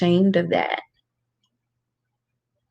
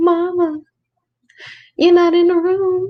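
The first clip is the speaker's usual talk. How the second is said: put-on much higher, whiny toddler voice. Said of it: "and be like".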